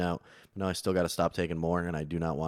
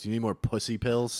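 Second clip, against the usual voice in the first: bullying, needling, taunting voice, pitched up; 5 semitones higher than usual. Retelling how a psychiatrist taunted them: imitating a bullying psychiatrist. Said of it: "He kinda bullied me into it".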